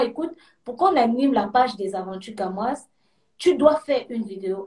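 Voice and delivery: ordinary talk, nothing marked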